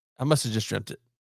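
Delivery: ordinary delivery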